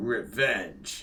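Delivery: video game announcer voice, calling out. Trying the voice after another speaker could not: Halo announcer voice. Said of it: "we'd have to play the Halo announcer".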